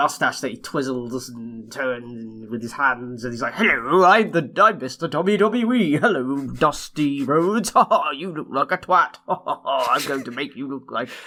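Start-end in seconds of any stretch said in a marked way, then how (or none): 3.5-11.1 put-on posh voice, slower. Acting out a man introducing himself and mocking someone, posh Mr. WWE voice. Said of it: "Because he's posh".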